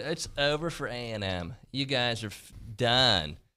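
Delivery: very slow, mocking, taunting drawl. Retelling what everybody said about a and m: imitating the doubters' voice. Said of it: "And they use that voice".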